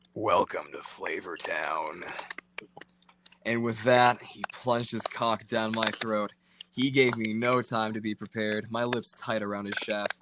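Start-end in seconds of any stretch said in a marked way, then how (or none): 0.2-2.1 deep, low, sultry voice with seductive undertone. Narrator reading a man's greeting in an erotic story, deep seductive voice. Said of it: "In a deep voice, with a seductive undertone".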